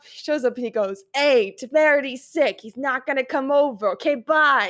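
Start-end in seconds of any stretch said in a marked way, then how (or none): 1.1-4.7 put-on New York accent. Asked to do it again, the speaker quotes a man in a stereotypical New Yorker voice. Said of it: "talks in a very like stereotypical New Yorker voice".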